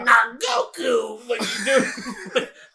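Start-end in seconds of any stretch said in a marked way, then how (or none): 0.0-1.3 high comic alien voice, higher and louder. Imitating the other speaker's King Kai voice. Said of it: "you literally just sounded like King Kai".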